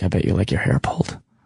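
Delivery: low, deep, raspy, creepy voice. Showing the line they often open with, put-on deep, raspy, creepy voice. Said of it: "in that deep, raspy, creepy voice".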